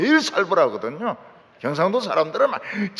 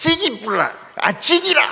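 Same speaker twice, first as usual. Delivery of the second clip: put-on broad Korean Gyeongsang accent, pitched up; 8 semitones higher than usual. Imitating how Gyeongsang people talk, in Gyeongsang dialect accent. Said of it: "이러면서 경상도 말을 해".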